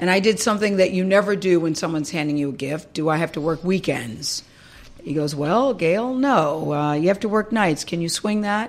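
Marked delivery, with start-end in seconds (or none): 5.3-8.7 mock sarcastic tone, slower. Retelling a man's answer to her question about the job offer, mock-sarcastic. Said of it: "he was being very sarcastic".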